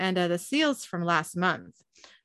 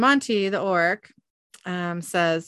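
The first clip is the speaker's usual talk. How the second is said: ordinary talk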